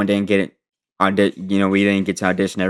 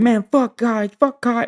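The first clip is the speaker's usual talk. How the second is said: mock very high-pitched, drawn-out screaming yell. Describing a man who came outside with his paper, retelling someone screaming. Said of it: "he was screaming".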